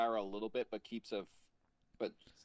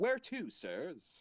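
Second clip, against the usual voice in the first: synthetic robotic machine voice, chiming; 6 semitones higher than usual. Narrator voicing the taxi cab as the passengers get in, robotic voice. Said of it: "robotic voice chimes in again".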